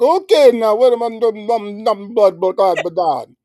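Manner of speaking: put-on very high, mumbled, garbled Jamaican accent. Retelling a masked woman who spoke to the speaker: imitating a Jamaican accent. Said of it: "she had a Jamaican accent".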